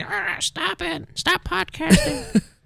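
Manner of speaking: squeaky, very high, very drawn-out, slow, rasping creaky cat voice. Voicing the speaker's cat as it tries to eat the cords, in a cat voice. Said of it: "That's my cat voice".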